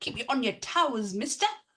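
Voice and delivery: clumsy, bad attempt at a British accent. Teasing the other speaker, imitating the listener's accent. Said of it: "I will never try your accent again".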